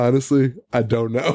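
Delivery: mock, dead serious line reading. Retelling a movie scene where a character answers a cop: imitating dead serious delivery. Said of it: "It was dead serious".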